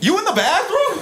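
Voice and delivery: very high, shouted yell. Retelling the group's yeller calling out: imitating someone yelling. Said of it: "dude who was doing the yelling".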